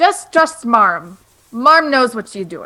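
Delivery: put-on mixed-up, muddled Russian accent. Playing Marm, urging a worried player to trust her: broken Russian-English accent. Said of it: "Why is Marm Russian?".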